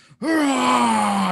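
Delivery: loud, high-pitched yelling. Playing a character arm-wrestling, yelling in the opponent's face. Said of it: "yell in his face".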